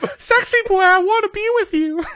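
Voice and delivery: very high female voice. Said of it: "So the high-pitched voice, I'd be like".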